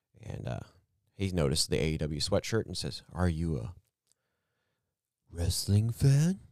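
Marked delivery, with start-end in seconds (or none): 3.1-6.3 quirky, offbeat, peculiar man's way of talking. Retelling how a guy noticed his AEW sweatshirt, imitating a weird-talking man. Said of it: "he talks kind of weird like that".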